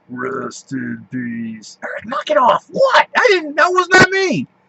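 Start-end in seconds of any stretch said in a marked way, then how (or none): 0.1-1.8 put-on voice, much quieter and slower. Sitting in a pitch-dark ride, do your Undertaker impression. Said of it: "I want to do my Undertaker impression".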